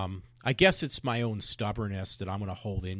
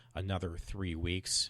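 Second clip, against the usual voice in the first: plain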